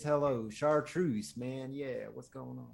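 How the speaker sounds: put-on rough, respectable Northern good-old-boy country voice. Recalling a country guy's voice, one speaker demonstrates it: gruff Northern country-guy voice. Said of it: "Northern kind of like this".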